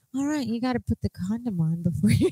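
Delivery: soft, gentle painter voice. Acting out the other speaker's dad talking, in a Bob Ross voice. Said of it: "Why did you just make him sound like Bob Ross?".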